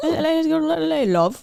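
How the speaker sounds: imitated slight Irish accent. Quoting a hard-to-understand line from a show: imitating a slight Irish accent. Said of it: "a little Irish".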